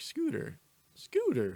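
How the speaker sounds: voice cracks very high on the word scooter. Explaining why his dad got an electric scooter, his voice cracks. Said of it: "Hello, voice crack".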